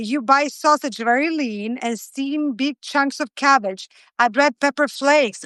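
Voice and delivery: ordinary talk, nothing marked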